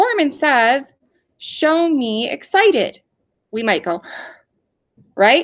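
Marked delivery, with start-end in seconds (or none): 0.0-3.0 slow, high-pitched, called-out voice. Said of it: "If I said".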